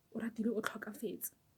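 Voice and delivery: soft, unvoiced whisper.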